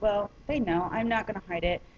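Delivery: ordinary delivery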